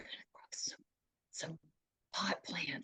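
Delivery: very soft hushed whisper, barely above a breath. Retelling how an aunt whispered at a family gathering: imitating someone whispering. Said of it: "she starts whispering".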